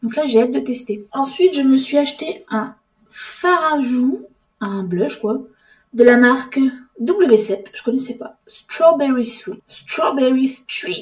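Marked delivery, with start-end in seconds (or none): 8.5-11.0 French speaker's words spoken in an English accent. Reading a new blush's shade name aloud, english accent. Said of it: "J'ai un accent anglais, dis donc".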